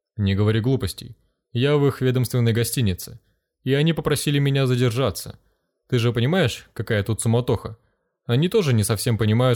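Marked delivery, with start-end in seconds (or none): none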